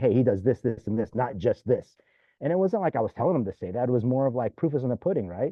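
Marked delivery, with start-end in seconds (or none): none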